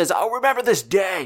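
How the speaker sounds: shouted at high pitch. Narrating the scene, the speaker voices Bloody Bjorn yelling from the deck. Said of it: "you hear Bloody Bjorn just kind of yell".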